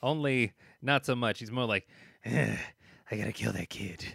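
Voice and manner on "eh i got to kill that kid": dark, caped vigilante hero voice. Acting out a trailer character's line about killing a kid: Batman voice. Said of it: "why did I go Batman with that one?".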